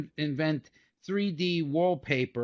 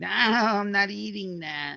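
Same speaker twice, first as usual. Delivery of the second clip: slow, put-on babyish voice, baby-talk style; 4 semitones higher than usual. Acting out a baby refusing to eat: imitating a baby refusing food. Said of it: "That was a baby, like".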